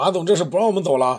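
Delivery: put-on annoyed voice. Retelling what a friend said to the boss blocking his car, mock-annoyed. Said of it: "明显有点不高兴啊，黑着脸".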